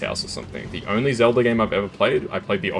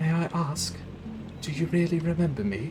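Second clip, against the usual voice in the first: very high, soft, put-on British girl voice; 10 semitones higher, 5 dB quieter than usual. Repeating a line to show how it sounded, british girl voice. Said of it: "that's almost exactly how it sounded".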